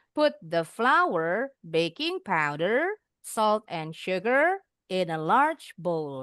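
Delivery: list tune rising at each comma, falling at end. Reading a recipe sentence aloud: rising on each item, falling at end. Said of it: "Intonasinya naik-naik. Terakhir turun".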